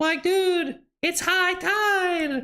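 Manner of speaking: very high, slow cartoon voice with "tide" stretched out. Try a voice you admit you can't do: bad impression of guy from SpongeBob. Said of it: "I totally can't do the guy from SpongeBob".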